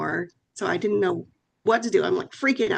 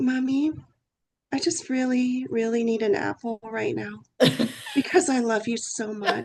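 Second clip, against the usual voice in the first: put-on sugary, sweet-talking, wheedling little kid voice; 2 semitones higher than usual. A mother acts out what her son did as a little boy, imitating him sweet-talking. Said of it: "bat his eyes up and be".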